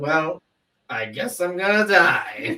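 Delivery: mock casually unbothered, slow, unfazed, resigned tone. Retelling a movie character's reaction after his pilot got shot: imitating a monotone reaction. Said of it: "his just monotone reaction to".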